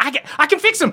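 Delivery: desperate, insistent pleading, pitched high.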